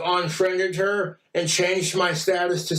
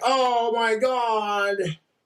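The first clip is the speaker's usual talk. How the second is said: acted weepy happy-tears gush, last word drawn out; 4 semitones higher than usual. Retelling a girlfriend crying over a gift ring: imitating Jessica crying. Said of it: "she was all crying".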